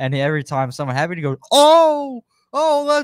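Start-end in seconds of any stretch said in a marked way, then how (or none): 1.5-3.0 put-on very high, loud, fired-up fan yelling. Retelling a hyped-up fan behind him at a wrestling match: imitating a hyped-up fan. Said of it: "he's getting hype".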